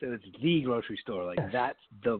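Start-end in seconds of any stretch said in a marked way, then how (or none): 0.4-1.2 heavy emphasis landing on the. Explaining emphasis with the grocery store example: stress on "the". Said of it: "it shows emphasis".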